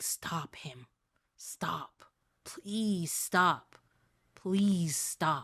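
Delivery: very slow, repeated, desperate pleading. A voice speaks through the spider on someone's shoulder: begging voice. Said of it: "And it is somebody begging, / And you can feel the voice that's coming from it sounding very different, like it's not its voice. / Over and over".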